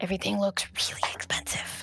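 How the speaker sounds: breathy, quiet, hushed whisper. Looking around a shiny, expensive shop in character: whispering. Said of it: "Why do we keep whispering?".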